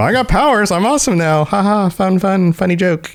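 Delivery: tongue-in-cheek bragging tone. Explaining how a line is meant, speaker acts it as mock boast, tongue in cheek. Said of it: "tongue in cheek ... Haha, fun, funny joke".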